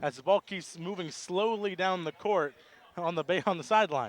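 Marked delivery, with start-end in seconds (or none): none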